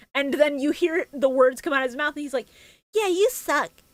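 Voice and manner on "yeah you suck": put-on pitched-up voice of a ten-year-old boy. Imitating a dubbed character's line, voiced by a child: imitating a child's voice. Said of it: "a ten-year-old boy".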